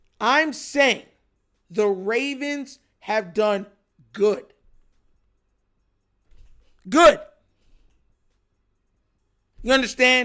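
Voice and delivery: very slow and concise delivery. Addressing viewers about a football team's drafting, speaking very slowly. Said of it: "I'm speaking very slow and I'm speaking very concise".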